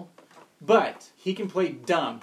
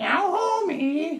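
over-the-top cartoon voice, very high pitch; 12 semitones higher than usual. Showing how an actress should not sound: exaggerated cartoon voice. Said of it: "it would look silly if, yeah, if Jenna Fisher was going".

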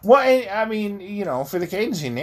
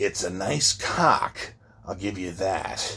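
put-on breathy male voice, much lower, quieter; 11 semitones lower, 5 dB quieter than usual. Re-enacting a line a man says, with a breathy imitation of him. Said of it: "It was more breathing".

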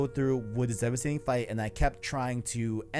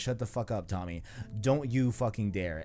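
plain

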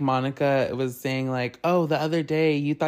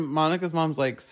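ordinary talk

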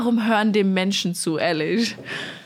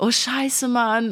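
whiny, pity-seeking whine; 4 semitones higher than usual. Retelling a guy asking to sleep over, the speaker imitates his pity-seeking whine. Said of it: "hat er so voll einen auf Mitleid gemacht".

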